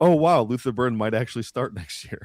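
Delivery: put-on, fully sarcastic amazement. Reading aloud their own earlier tweet: retelling own sarcastic tweet. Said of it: "That was a hundred percent sarcasm".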